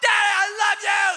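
put-on very high, very loud shrieking kids' shout. A dad retelling how his kids shout to him, imitating kids shouting. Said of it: "And so they are shouting".

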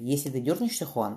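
plain

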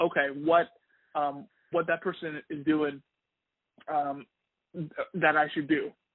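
normal talking voice

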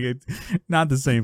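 ordinary delivery

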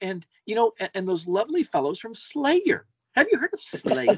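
very high, sweet, nicey-nice lady voice. Mocking ladies introducing metal bands, imitating how the ladies talk. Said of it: "they talk like that".

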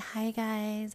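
mock high, cutesy, cooing baby voice.

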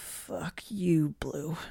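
rasping croak. Charlotte answers Blue, who urges her to sleep and eat; rasping croak. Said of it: "Charlotte rasp croaks".

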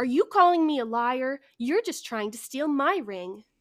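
put-on, imitated screaming cry. Retelling how a woman accused the speaker of lying: imitating a scream. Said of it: "D L F screams".

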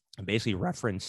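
voice cracks and breaks. Summarizing someone's Instagram post about the PGA Tour, voice cracking. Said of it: "that was a big voice crack".

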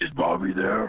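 put-on raspy, hoarse, smoker-sounding voice. A caller phoning into the show asks for bobby, fake raspy voice. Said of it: "stop the fucking smoking".

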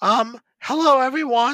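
put-on very high, shrill, loud, crackling teen voice. Narrator voices a young man behind the desk greeting visitors: cracking puberty voice. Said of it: "he says with his crackling voice brought on by puberty".

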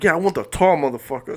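play-acted brash holler, loud as can be. Retelling how a player loudly called for him in gym: imitating someone yelling loudly. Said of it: "Loud as shit".

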